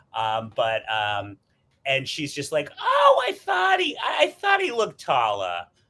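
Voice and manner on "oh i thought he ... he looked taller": put-on motherly voice, very high, swooping, sing-song. Retelling what his mom said about someone, imitating his mom. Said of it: "that's my impression of his mom".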